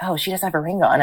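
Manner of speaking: put-on, imitated whisper. Retelling what a customer said to her son: imitating a whisper. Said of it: "whispering, but I could clearly hear".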